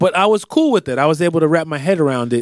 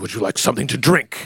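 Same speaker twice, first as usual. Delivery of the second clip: brooding, theatrical, dramatic, angsty mobster voice; 3 semitones lower than usual. Imitating an actor's take on a mobster: Vincent D'Onofrio as Kingpin. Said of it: "That's a great Vincent D'Onofrio".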